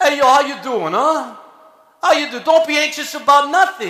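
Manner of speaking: thick Philly street accent, tough-guy voice. You are preaching and notice you sound like Rocky, so address your listeners in a Rocky Balboa voice. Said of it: "Now I sound like Rocky Balboa".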